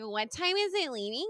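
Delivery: put-on drunk, slurring-style voice.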